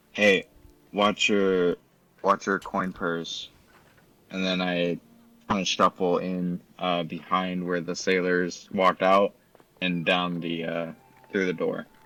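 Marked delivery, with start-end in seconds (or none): 0.2-3.5 voiced stage half-whisper, under the breath. A player nudges Ash and half-whispers under their breath. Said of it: "whisper under my breath".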